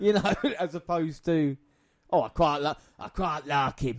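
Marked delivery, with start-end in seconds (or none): 2.1-4.0 put-on Scottish accent, badly done. Acting out how someone might talk about a person, attempted Scottish accent. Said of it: "I'm trying to do a Scottish accent".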